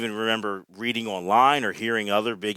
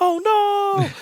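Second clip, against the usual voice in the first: shrill, very high-pitched, loud cry; 6 dB louder than usual. Describing a favourite comedy bit, imitating its reaction: Mister Bill voice. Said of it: "that reaction and that voice".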